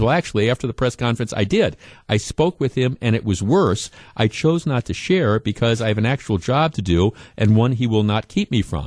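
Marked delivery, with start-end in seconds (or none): none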